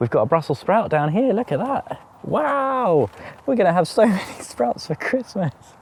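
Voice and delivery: high, mock-delighted sarcasm. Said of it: "obviously I am being sarcastic".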